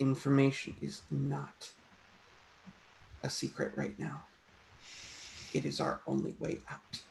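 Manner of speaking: barely audible hushed whisper under the breath. Speaking in character to her, barely audible: speaking quietly under his breath. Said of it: "as quietly as possible under his breath goes".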